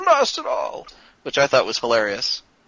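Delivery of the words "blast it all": very high, short cry. Retelling a cartoon villain's last word as a missile hits: Megatron screaming. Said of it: "And Megatron screaming".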